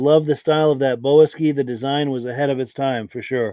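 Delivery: normal talking voice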